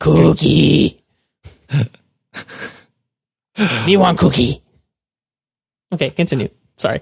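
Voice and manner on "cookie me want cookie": drawn-out, low, rough delivery. Joking after the other speaker says cookies: Cookie Monster voice. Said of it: "I just thought of Cookie Monster".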